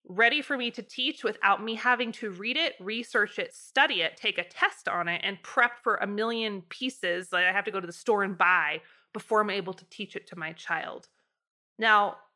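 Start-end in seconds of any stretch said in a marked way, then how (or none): none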